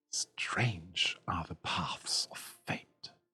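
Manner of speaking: hushed, soft whisper, very close up. Game narrator introduces the character Tyra, whispering into your ear. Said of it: "whispers into your ear".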